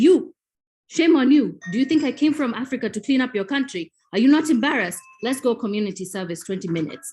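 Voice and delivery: loud, mock stern, indignant, shaming scolding. Retelling how a tiny woman confronted a man who littered, retelling an indignant scolding. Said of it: "she marched up to him".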